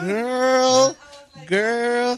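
put-on high, teasing girl girl.

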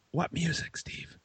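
very quiet, hushed, barely voiced whisper. [name] answers Steve's call to play the music, whispering. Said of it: "why are you whispering?".

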